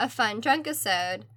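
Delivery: plain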